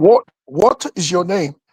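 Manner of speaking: put-on British movie-style accent. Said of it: "everyone talks like".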